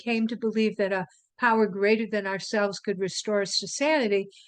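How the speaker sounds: ordinary talk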